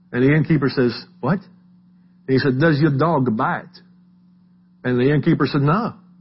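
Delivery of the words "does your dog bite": put-on French accent. Retelling Peter Sellers checking in with an innkeeper: Peter Sellers' French accent. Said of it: "and his French accent".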